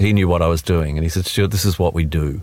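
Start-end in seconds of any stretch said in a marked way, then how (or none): none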